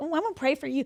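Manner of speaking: snide, mocking, heavily sarcastic and clearly insincere tone. Imitating people who promise to pray for you, imitating sarcastic people. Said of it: "in the most like sarcastic way".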